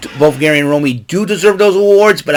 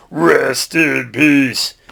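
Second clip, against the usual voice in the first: rough, creaky, raspy put-on voice; 3 dB quieter than usual. Running through wrestler impressions one after another: Undertaker impression. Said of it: "I can do my Undertaker impression".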